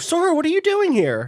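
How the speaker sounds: squeaked out, way up high. Acting out Mickey's line on finding Sora there, in a bad Mickey Mouse voice. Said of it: "That's not a good Mickey".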